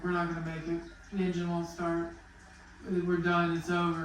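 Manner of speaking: ordinary talk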